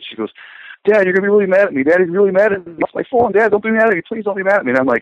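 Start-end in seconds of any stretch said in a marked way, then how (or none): 0.9-4.7 mock crying, very high, tearful begging. Father retells his daughter losing her phone: imitating daughter crying. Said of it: "she's crying".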